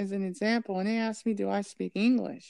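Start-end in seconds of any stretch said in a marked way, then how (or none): none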